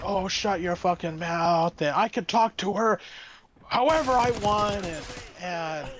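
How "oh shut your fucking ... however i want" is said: put-on yelling, higher. Retelling a man who went looking for a manager, re-enacting his yelling. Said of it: "and the guy yelling".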